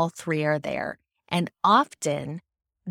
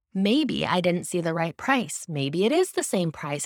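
ordinary talk, nothing marked

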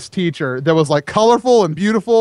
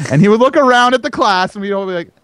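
ordinary talk

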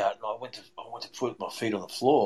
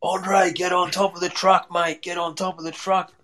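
play-acted, high-pitched, far-carrying screaming; 7 semitones higher, 3 dB louder than usual. Retelling a friend's warning in the jungle: imitating a friend screaming. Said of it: "my mate Adam's screaming".

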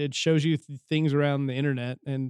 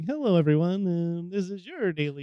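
small, nerdy, welcoming host-style voice; 4 semitones higher than usual. Describing a favorite YouTube channel, imitating its host's nerdy little intro voice. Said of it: "The nerdiest little voice that says".

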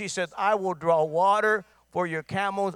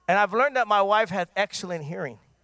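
usual speaking voice

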